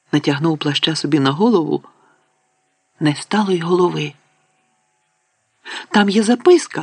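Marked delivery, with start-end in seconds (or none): 5.8-6.8 abrupt, sudden, high, blurted outcry. Narrator reading Ron's line in a story: sudden exclamation. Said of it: "раптом вигукнув Рон".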